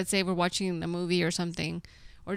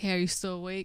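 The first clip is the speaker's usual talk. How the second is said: usual speaking voice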